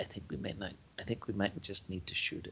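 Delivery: hushed, very quiet whispered aside. Whispering to the other players about the creature: whispering very quietly. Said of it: "I'm going to whisper really, really quietly".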